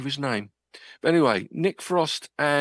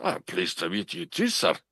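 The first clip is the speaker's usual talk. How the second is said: put-on casual, plain-talking Scottish accent; 3 dB quieter than usual. Retelling a handshake on meeting David Tennant, give his reply in David Tennant's Scottish accent. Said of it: "in his Scottish accent".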